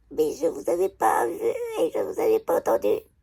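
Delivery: small, weak, feeble little wisp of a voice. Retelling how a woman replied after being asked to apologize, imitating a tiny little voice. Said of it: "avec une toute petite voix de merde".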